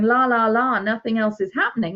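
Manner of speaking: usual speaking voice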